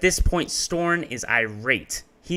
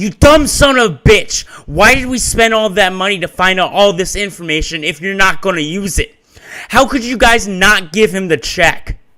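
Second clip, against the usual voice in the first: put-on scream, higher and louder; 7 semitones higher, 12 dB louder than usual. Retelling a heated call, imitating someone screaming. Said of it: "he screams the mic in".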